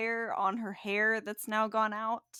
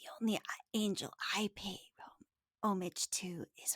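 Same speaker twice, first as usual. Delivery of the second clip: soft, breathy, whispered, hissed-out words; 9 dB quieter than usual. Voicing a character who looks at your wings in surprise, hissing. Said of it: "just kind of hisses out".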